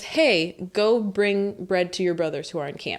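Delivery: ordinary delivery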